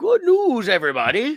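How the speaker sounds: put-on squeaky, high-pitched cartoon old man voice. Sharing good news with another speaker, doing the old man from Futurama voice. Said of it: "gotta do like the old man from, uh, Futurama".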